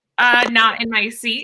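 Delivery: normal talking voice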